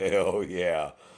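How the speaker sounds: imitated smiling, gleeful delivery. Imitating officers who smile when a subject resists: imitating officers smiling. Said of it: "They start smiling like".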